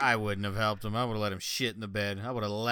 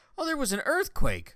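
put-on teasing joking, very high-pitched and raised; 6 dB louder than usual. Retelling how someone jokingly explained a rumble heard at the house, retelling a joking remark. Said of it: "Ava jokingly goes".

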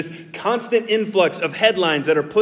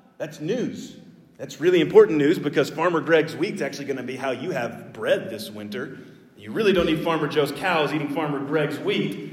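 usual speaking voice

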